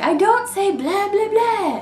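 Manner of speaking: very high, slow, drawn-out vampire voice. Nail polish reviewer quoting the vampire who inspired the polish, Drac impression. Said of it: "you know how he's always like".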